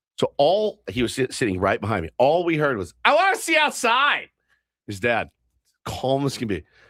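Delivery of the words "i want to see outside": put-on very high-pitched, loud two-year-old voice. Retelling a two-year-old behind them on the plane: imitating a loud toddler. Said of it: "He doesn't know volume control".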